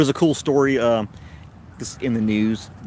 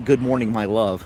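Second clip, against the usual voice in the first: usual speaking voice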